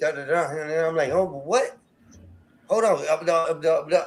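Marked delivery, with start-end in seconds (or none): 1.1-4.0 put-on stuttering, stammering delivery. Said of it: "I'm stuttering at this point".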